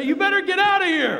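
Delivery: shrill, full-volume yell, very high pitch. Speaker recounts ordering someone out at gunpoint, retelling a shout as loud as possible. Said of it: "as loud as I can".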